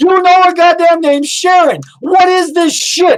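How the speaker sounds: very high, enraged, furious in-character screaming. Playing an angry character demanding answers: in-character screaming. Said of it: "He's screaming at this point".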